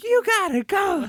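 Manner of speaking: very high put-on screaming in a woman's voice.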